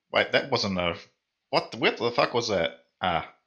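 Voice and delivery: ordinary talk, nothing marked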